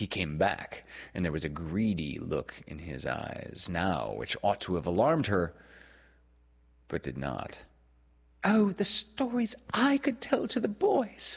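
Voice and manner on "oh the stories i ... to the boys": exclaimed, crying out at very high pitch. A girl responds to a boy who tempted her: crying out. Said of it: "she cried".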